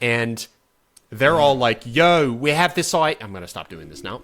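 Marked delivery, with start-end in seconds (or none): 1.8-2.9 put-on cockney accent, pitched up and slow. Retelling a story, voicing a bunch of British dudes: cockney accent. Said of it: "They're really cockney".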